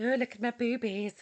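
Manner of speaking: put-on, mock creepy voice. Joking about posing sexy online: put-on creepy voice. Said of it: "in a creepy voice".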